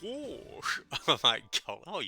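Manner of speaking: squawked out high and loud. Offering to voice the duck for Disney, trying it out: Donald Duck voice. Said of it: "It's my Donald Duck".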